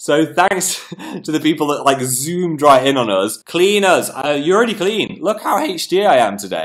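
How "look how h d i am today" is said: little voice break mid-line. Speaker talking to viewers: little voice break. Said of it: "I had a little voice break then".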